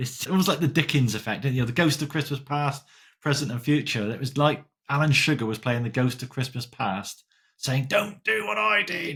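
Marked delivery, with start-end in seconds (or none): 7.9-9.2 very high, slow, creaky voice. Picturing the Ghost of Christmas Past giving a warning, bad Alan Sugar impression. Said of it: "that was a really bad Alan Sugar impression".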